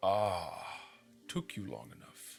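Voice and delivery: voice from nowhere. Narrating what the player hears, the speaker performs a disembodied voice. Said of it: "a disembodied voice".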